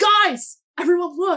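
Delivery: excited, high-pitched, loud call.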